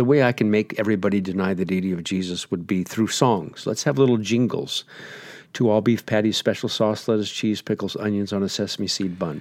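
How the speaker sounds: ordinary talk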